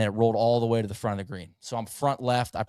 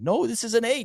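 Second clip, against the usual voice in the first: very high, put-on South American accent; 12 semitones higher than usual. Retelling what a golfer's caddy said about the shot, south american accent. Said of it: "like S- South American uh, accent".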